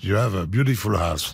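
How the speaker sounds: heavy French accent with badly pronounced English. Retelling complimenting his host's wife on the house, in heavily French-accented English. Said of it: "mais je prononce très mal".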